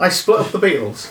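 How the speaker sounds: high-pitched, put-on northeastern US accent. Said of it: "northeastern accent ... impression of [name]".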